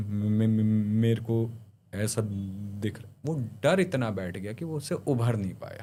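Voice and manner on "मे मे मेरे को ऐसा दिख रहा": mock-scared, fearful stammer, much slower. Speaker retelling how a frightened man began to talk, imitating fearful stammering. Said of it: "वो ऐसे बात करने लगा।".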